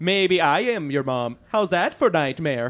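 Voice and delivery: put-on Swedish accent. Asked to do the Swedish voice, the speaker reads a tweet: Swedish voice. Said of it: "I could try to read a tweet like in that voice".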